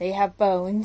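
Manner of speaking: put-on crestfallen, deflated, disappointed tone. Retelling how she answered the speaker's question, mock-disappointed voice. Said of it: "with the most, like, disappointed voice".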